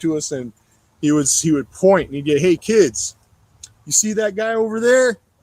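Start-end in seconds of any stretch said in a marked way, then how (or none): 2.4-5.1 put-on showy, loud, high announcing voice. Retelling how the club president pointed out a fed to kids: imitating someone being loud. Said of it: "He'd be all loud about it".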